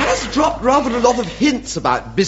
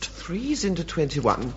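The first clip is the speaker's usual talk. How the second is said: soft mumbled speech. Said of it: "what are you mumbling about".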